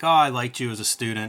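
normal talking voice

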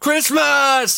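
very high, hyper-energetic, overexcited shout. Picturing an overly energetic grown man: mock energetic exclamation. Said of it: "being that energetic".

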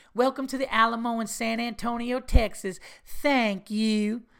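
slow, high, deliberate tour-guide announcement voice. Retelling a movie scene where a tour guide greets people: Alamo tour lady impression. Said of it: "we would do impressions of it".

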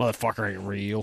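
put-on contemptuous tone. Imitating the other speaker's remark about Magic Mike: imitating someone's disdainful tone. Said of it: "such disdain in your voice".

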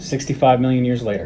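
normal talking voice

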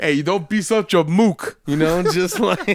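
exaggerated, over-the-top New Jersey–New York accent. Describing a character who knows of Hull House, doing an exaggerated New Jersey accent. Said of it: "very exaggerated New Jersey, New York accent".

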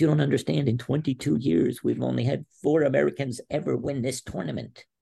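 high, put-on, near-tears heartfelt pleading. Retelling what a man said after yelling at the speaker, imitating someone tearful. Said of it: "next minute he's got tears in his eyes".

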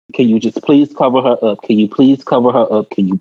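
ordinary delivery

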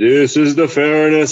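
grand, proclaiming, verdict-like declaring tone. Showing how a fairness argument needn't be made, in a booming voice. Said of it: "with booming voice".

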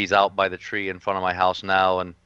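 ordinary delivery

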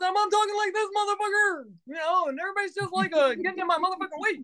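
fast, swooping, high, wild, over-the-top voice. A clown describing his stage persona demonstrates it in his Duke clown persona voice. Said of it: "that was a little bit of Duke for you".

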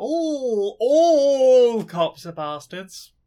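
"all" hit hard with heavy stress. Stating a slogan in casual conversation: stress on all. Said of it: "Emphasis on the all".

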